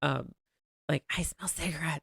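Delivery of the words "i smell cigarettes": put-on whisper, quieter. Retelling what mom said in a tiny restaurant: imitating someone whispering. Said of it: "her even just whispering".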